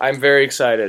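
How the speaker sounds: deadpan, sarcastic excitement. Answering a remark that he must be excited: sarcastic excitement. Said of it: "Can't you tell by the tone of my voice?".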